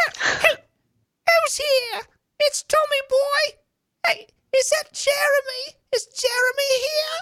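very high, drawn-out spirit voice, every word dragged. Retelling a woman channeling spirits, doing the voice of Tommy Boy. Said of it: "she's like doing the voice".

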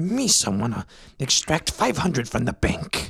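deliberate stage-whispered delivery. Acting out a rich person whispering an order to a servant: whispering in Jar Jar Binks voice. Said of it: "you whisper to your, like, servant".

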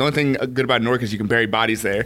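ordinary delivery

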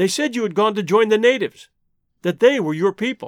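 plain reading voice

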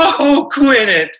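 very high-pitched voice. Retelling what he said after a trick in his magic act: his magician character's catchphrase. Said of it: "like that".

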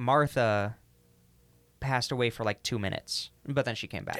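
ordinary talk

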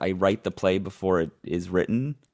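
ordinary delivery

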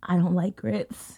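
soft, hushed half-whisper under the breath. Retelling confessing to a waiter in a restaurant: half-whispering. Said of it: "I kind of whispered".

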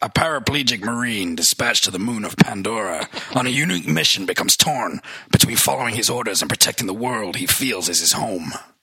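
put-on gruff, military-sounding voice with American accent. Reading a film synopsis aloud: gruff military American Stephen Lang voice. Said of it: "so Stephen Lang, kind of gruff, military, American".

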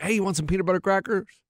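ordinary talk, nothing marked

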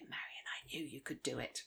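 soft, hushed whisper into the ear. Retelling words James whispered into the speaker's ear: retelling a whisper. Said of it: "leant across and whispered into my ear".

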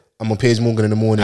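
usual speaking voice

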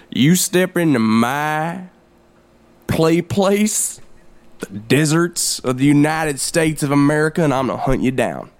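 threatening tone with "my" drawn out. Improvising a role after naming the pair the Terrorist Hunters: playing a Terrorist Hunter. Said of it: "I'm [name]".

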